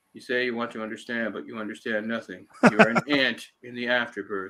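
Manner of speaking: level, bored, disinterested flat monotone. Comparing two actors' versions of a scene, imitating Tom Noonan's bored monotone. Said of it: "he's just completely monotone".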